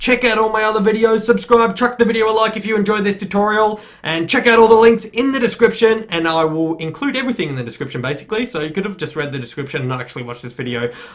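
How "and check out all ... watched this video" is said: talking far too quickly, rushed and rattled off. Youtuber wrapping up a tutorial video, pointing viewers to the description, talking way too quick. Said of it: "I'm talking way too quick now".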